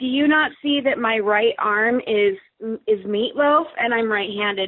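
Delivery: ordinary delivery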